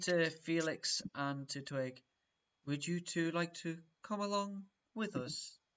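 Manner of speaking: slow, listless, bored, dragging drawl. Inviting two others to come along, slow and bored. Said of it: "All slow and bored".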